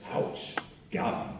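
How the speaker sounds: whispered, deliberately bad put-on character voice. Recapping a scene where Adam throws shade at Hawkeye, in a bad Hawkeye impression. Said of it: "I'm gonna do a bad Hawkeye impression".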